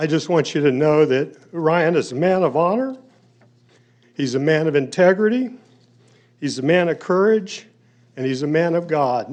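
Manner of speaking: heartfelt, emotional voice. Speaking about a man they've known since his birth, getting a little emotional. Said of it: "I'm getting a little emotional here".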